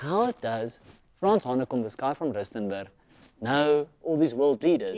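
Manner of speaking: ordinary delivery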